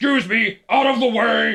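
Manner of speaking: rough, gruff voice, pitched very high. Retelling what a man said while stomping around, real gruff voice. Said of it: "like in a real gruff voice".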